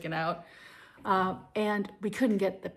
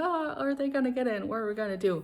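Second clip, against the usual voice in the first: acted nervous, anxious, worried fretting tone; 4 semitones higher than usual. Retelling parents waiting to hear if they got in: imitating nervous parents. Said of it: "we're, like, all nervous".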